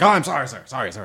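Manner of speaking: groveling, put-on robot voice. Acting out the robot Grovel apologizing to the bad guy: Grovel groveling apology. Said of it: "every time he was like".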